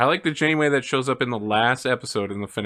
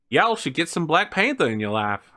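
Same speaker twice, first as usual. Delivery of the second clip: put-on American Southern accent; 4 semitones higher than usual. Repeating another speaker's line to match their accent: imitating a Southern accent. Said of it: "let me match that accent for a second".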